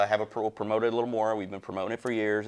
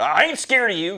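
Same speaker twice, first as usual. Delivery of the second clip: mock quivering voice, very high-pitched and very loud; 10 semitones higher, 9 dB louder than usual. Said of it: "Billy Bob starts quivering".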